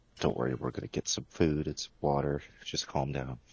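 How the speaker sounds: hushed, low-key, soft, soothing voice. Role-playing, a character calms a fidgety chick in a coat pocket, quietly. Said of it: "I say it like quietly".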